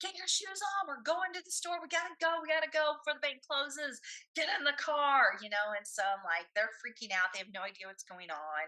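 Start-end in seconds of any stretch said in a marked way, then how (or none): 0.0-5.4 mock frantic, high-pitched maniac yelling. A mom retells rushing her kids to the car before the bank closes; retelling frantic screaming. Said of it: "I'm like screaming at my kids like a maniac".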